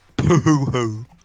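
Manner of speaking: loud, put-on character cackle. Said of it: "It's just laughter noise".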